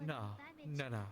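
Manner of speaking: repeated no, dismissive brushing-off tone. Mocking how another speaker denies it: imitating someone denying it. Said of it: "I love the way he denies it".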